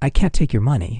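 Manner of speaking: ordinary talk, nothing marked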